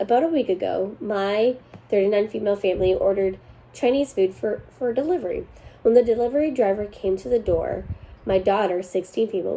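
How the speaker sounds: normal talking voice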